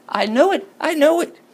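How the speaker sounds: put-on very high, shrill, shrieking scream. Retelling how a woman reacted when a visitor walked in: retelling a woman's screaming. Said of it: "The woman starts screaming".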